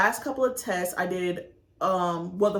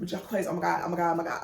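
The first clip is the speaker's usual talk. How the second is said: frantic, panicked, freaking out, spiraling; 3 semitones higher than usual. Recalling seeing a failing final grade in nursing school, retelling freaking out. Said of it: "I'm like freaking out".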